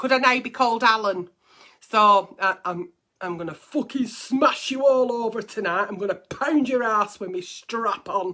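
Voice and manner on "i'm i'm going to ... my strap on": faked macho put-on manly voice. Joking about not knowing how to talk as a man, the speaker tries a put-on manly voice again. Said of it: "I don't know how to talk as a man".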